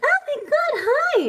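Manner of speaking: very high, bubbly, energetic, drawn-out excited voice. Streamer showing the voice newbie viewers ask for, high-pitched energetic voice. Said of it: "you don't sound high pitched enough".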